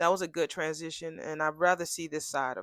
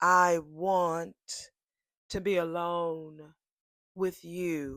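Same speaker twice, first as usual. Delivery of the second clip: put-on, imitated, slowly spoken delivery. Retelling a character's line to her date: imitating someone saying it slowly. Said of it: "I'm gonna say this to you slowly".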